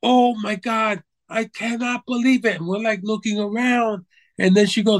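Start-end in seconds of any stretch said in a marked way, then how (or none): 0.0-2.6 mock full-lungs screaming, higher pitch. Retelling how a blonde woman stopped near their table, imitating someone screaming. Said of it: "to the top of her lungs".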